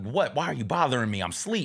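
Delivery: ordinary delivery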